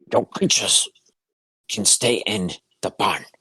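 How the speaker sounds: goblin voice, gurgled through. Narrating to the players, voicing a tiny goblin who stops them: gurgling goblin voice. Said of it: "he gurgles back in Goblin".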